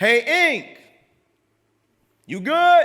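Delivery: very loud, high, shrill, very slow, drawn-out scream. Retelling a stranger calling out from his car window: imitating someone screaming. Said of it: "he screams out".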